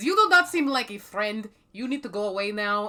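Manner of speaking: booming, resounding, very loud delivery. In a tabletop game, the player voices Euphoria addressing someone approaching, booming Euphoria voice. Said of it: "resounds out in a booming voice".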